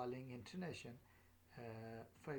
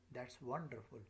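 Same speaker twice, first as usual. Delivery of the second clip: pitch dropping down at the end of "wonderful". Teaching exclamation intonation, pitch falls on 'wonderful'. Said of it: "my voice is dropping down".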